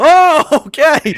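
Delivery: high, loud, mock startled gasp. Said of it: "even he was like".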